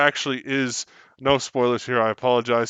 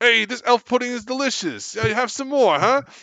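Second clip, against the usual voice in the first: put-on high goblin voice with Brooklyn accent; 11 semitones higher than usual. Improvising goblins greeting each other, Brooklyn-accent goblin voice. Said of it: "The goblins from Brooklyn".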